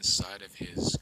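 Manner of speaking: plain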